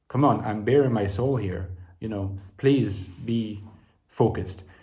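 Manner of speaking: ordinary talk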